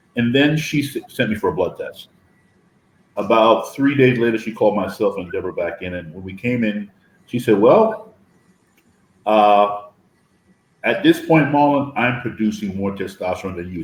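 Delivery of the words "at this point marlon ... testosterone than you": ordinary talk, nothing marked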